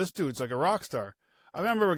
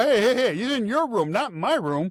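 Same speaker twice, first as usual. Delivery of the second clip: mock yelling, higher; 7 semitones higher, 4 dB louder than usual. Retelling a teammate's complaint during a game: imitating someone yelling. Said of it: "Zach's yelling at me".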